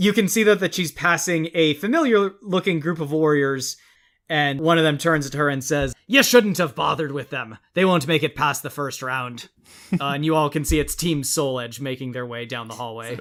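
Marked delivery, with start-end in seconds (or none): 6.1-9.5 put-on seafaring pirate accent, near Scottish. Narrating a game scene, voicing a warrior who speaks to a passing woman: pirate accent. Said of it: "Was that a Scottish accent? ... that was a pirate accent".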